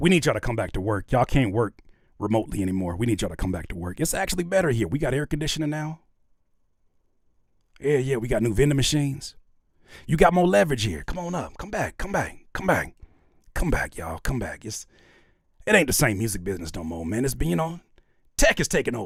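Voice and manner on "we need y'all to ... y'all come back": coaxing, salesy corporate advert delivery. Mocking a back-to-work commercial: mock Amazon commercial pitch. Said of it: "that Amazon said when they said".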